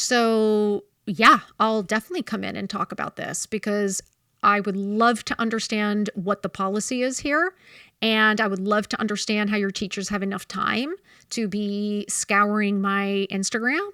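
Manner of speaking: ordinary talk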